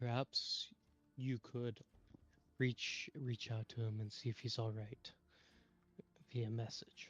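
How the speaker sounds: quiet, low, hushed whisper. Speaking in character to Valar about a coughing elf: whispering. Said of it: "I'm gonna whisper to Valar".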